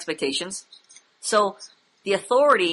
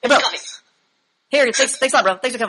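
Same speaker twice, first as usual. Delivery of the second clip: rapid-fire, tumbling, super fast rattled-off talk; 4 semitones higher, 4 dB louder than usual. Describing a man seen while getting coffee, imitating how he talks super fast. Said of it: "He's like super fast, like this".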